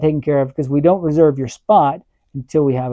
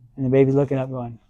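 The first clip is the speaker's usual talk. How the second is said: ordinary talk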